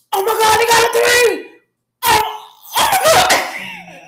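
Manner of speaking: mock elated, very high, drawn-out excited yelling. Retelling a caller's reaction to the three: imitating someone's excited yelling. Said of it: "We were just so excited".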